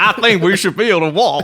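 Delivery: put-on southern drawl. Continuing a Donald Trump impression: Trump impression sounding like Benoit Blanc. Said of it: "You sounded like Benoit Blanc".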